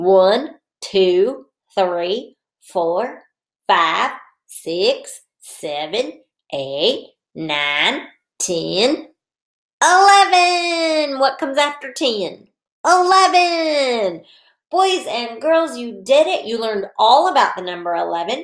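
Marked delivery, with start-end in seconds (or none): 0.0-11.2 put-on cowboy voice. Teacher counting to eleven with the boys and girls, in a cowboy voice. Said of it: "Let's use our cowboy voice".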